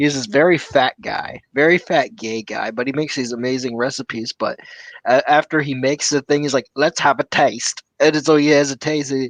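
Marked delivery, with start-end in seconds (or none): 6.7-7.8 put-on Australian accent. Retelling how a cooking channel host tastes his food: imitating an australian accent. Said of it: "your take on the Australian accent".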